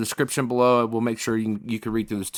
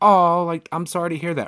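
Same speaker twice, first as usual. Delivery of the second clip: mock empathetic, sympathetic tone, higher; 5 semitones higher than usual. Retelling what the front desk agent says: imitating a sympathetic voice. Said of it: "I made sure she's sympathetic and empathetic".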